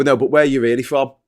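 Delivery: ordinary talk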